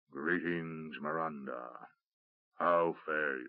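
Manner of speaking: huge, deep, low rumbling voice from within the throat. Narrator reads the ancient creature greeting Miranda: Oracle of Aal's great rumbling voice. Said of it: "A great rumbling voice issued from within the throat".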